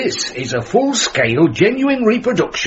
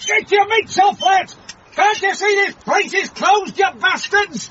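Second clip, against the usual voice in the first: shrill, very high, furious bellow of rage; 13 semitones higher than usual. Narrator reading a story where a voice yells at Uncle Mort, bellowing. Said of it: "a voice bellowed".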